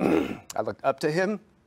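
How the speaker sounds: emotion breaking through, choked up, voice catching. Remembering a man in the family they looked up to, the speaker gets choked up. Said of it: "I'm getting choked up".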